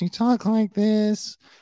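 very high-pitched, squeaky way of talking. Describing a former SNL cast member seen around town, doing a Victoria Jackson impression. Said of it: "She had a really high voice".

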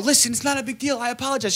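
meek, high, begging, pleading tone. Retelling asking a woman to let him on stage, imitating Bryce Wall pleading. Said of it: "I turned into Bryce Wall real quick".

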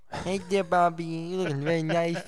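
put-on lisp through the s in "nice". Teasing someone about a lisp, Mike Tyson lisp. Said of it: "that little fucking Mike Tyson lisp you got going on there".

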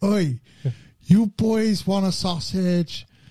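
mock high, hollering shout. Retelling how a man randomly called out to the speaker's group, imitating someone shouting. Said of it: "just shouting at us and going".

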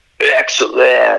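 clumsy, put-on, creaky, dim-sounding teenage voice. Quoting the Bill and Ted films, bad impression of a dumb teenager. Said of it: "that's a really bad impersonation".

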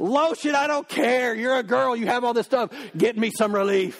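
put-on desperate, frantic yelling, held in. Recounting what they said to her once they got to the car, retelling a yell. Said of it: "I'm yelling at her".

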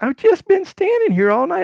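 high, loud, indignant tone.

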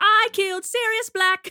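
piercing shriek, very high and at full volume. Taking turns on Harry Potter character impressions, now a Bellatrix impression. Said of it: "I'll do an impression of each of them".

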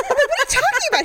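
high, laughing, baffled voice.

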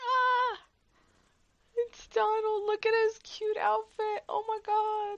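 excited high-pitched squealing.

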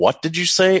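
shrill yell, pitched very high. Retelling hearing bad news over the phone: retelling a yell into the phone. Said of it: "yelled in the phone".

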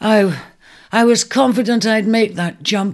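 gasped out. Sage has tumbled badly missing a jump and hurt his hip, gasping. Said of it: "he gasped".

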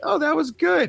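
mock dull tone, squeaked out very high.

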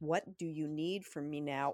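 plain

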